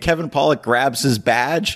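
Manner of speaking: normal talking voice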